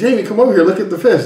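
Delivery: high, excited voice, calling out.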